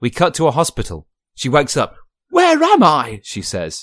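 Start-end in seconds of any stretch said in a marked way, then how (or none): 2.3-3.2 put-on Cockney accent, higher and louder. Telling a made-up story, voicing Judi Dench waking in hospital: Cockney accent. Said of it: "She's Cockney".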